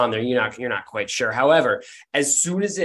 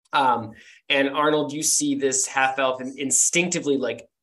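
ordinary delivery

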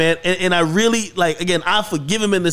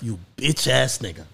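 muttering under breath, much lower, quieter; 7 semitones lower, 6 dB quieter than usual. Retelling a woman's insult to a man, mumbled under her breath. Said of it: "just mumble under her breath".

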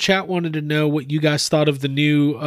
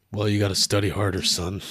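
very low, very deep, soft fatherly dad voice; 7 semitones lower, 5 dB quieter than usual. Acting out a dad's reply to a kid's failing grade, deep dad voice. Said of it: "That was just like a deep voice".

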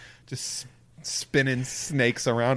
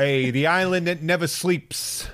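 put-on New Zealand accent, higher pitch; 5 semitones higher than usual. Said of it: "Auckland, New York".

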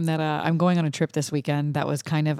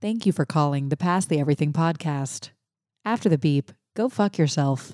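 dead-serious, formal recorded-message voice. Making up a voicemail greeting for the Pass the Everything podcast, serious-sounding voice. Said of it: "serious sounding voice".

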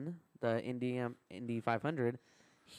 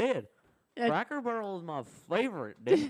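put-on Iowa hillbilly voice; 9 semitones higher, 4 dB louder than usual. Repeating a bit from a trip, in an Iowa hillbilly redneck voice. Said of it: "That's your Iowa hillbilly redneck voice".

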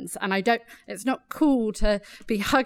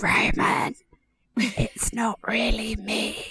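slow, drawn-out, spooky, scary whisper. Speaker recalls doing voices to scare someone at night: retelling a scary voice. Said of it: "I would do scary voices".

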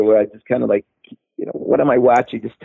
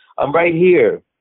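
put-on scream, pitched higher; 5 semitones higher than usual. Retelling own words from a joke for the show: imitating own screaming. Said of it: "And I'm screaming".

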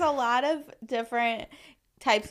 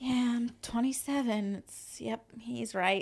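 acted mutter under breath, much quieter; 6 dB quieter than usual. Retelling walking behind a friend, the speaker repeats what they said, retelling muttering under breath. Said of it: "say under my breath".

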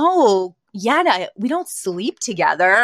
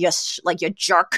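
put-on muttering under the breath, lower pitch; 4 semitones lower, 3 dB quieter than usual. Retelling a TV scene where she answers him: imitating muttering under her breath. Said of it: "under her breath".

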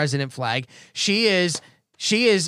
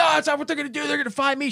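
put-on, very high screaming yell; 10 semitones higher than usual. Retelling what a woman said to the lady, retelling a woman screaming. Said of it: "She starts screaming".

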